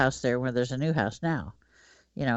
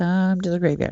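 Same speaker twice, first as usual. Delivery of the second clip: small little voice, pitched higher; 5 semitones higher, 3 dB louder than usual. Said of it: "I hear this little voice".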